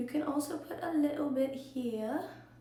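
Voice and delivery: sudden, unplanned English accent. Giving a makeup tutorial, slipping into an English accent. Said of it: "What is that English accent that just came out of me?".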